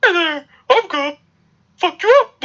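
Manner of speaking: very high, squeaky little cartoon mouse voice. Imitating a man said to have a very high-pitched voice: high-pitched put-on voice. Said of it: "Okay, Mickey Mouse".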